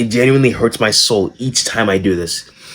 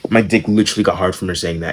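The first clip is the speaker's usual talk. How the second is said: usual speaking voice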